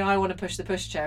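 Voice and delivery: ordinary talk, nothing marked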